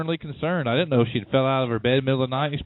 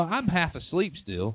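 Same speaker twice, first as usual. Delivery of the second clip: ordinary delivery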